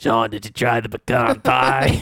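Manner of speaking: put-on smoker's voice. Retelling how a chain-smoking woman talked to sean, imitating a chain smoker's voice. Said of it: "But she sounded like this".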